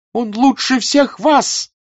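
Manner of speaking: sharp, very high, loud cry. Raising herself up as someone condemns the man she defends, crying out. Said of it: "вскрикнула Наташа, приподнимаясь".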